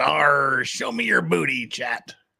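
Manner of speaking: slow, drawn-out, put-on stage pirate growl. Streamer reads a viewer's super chat aloud in pirate voice. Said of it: "anything you want me to say in pirate voice".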